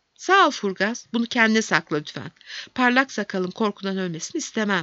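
plain reading voice

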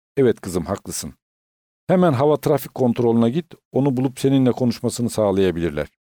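plain

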